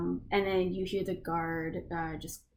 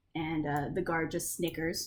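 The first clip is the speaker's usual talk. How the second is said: ordinary talk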